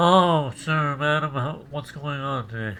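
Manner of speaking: stuffed-up, blocked-nose, nasal-sounding voice. Recalling days with tissue up the nose, the speaker imitates a stuffed-up nose. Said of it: "I would sound like this".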